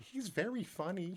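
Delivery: put-on soft, very high, sweet little old lady voice. Retelling what a little old lady said about a comedy show: imitating a sweet old lady. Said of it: "She just looks up at me all sweet".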